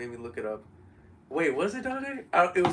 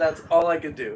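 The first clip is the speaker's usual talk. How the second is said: normal talking voice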